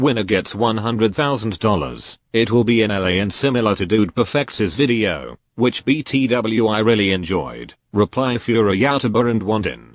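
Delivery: robotic, synthetic computer text-to-speech voice. A YouTuber reads out a tweet, in a computer text-to-speech voice. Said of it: "I'm just going to use a computer voice".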